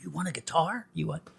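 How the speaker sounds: barely audible, hushed, very quiet half-whisper. Podcast guest retelling a girl's father offering a guitar, half-whispering the father's words. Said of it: "I'm I'm whispering and miming a lot".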